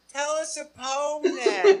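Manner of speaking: sugary, sweetest voice, very high-pitched, slow. Retelling what a woman said after a silence, imitating the sweetest voice. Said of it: "in the sweetest voice".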